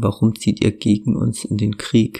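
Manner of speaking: ordinary delivery, nothing marked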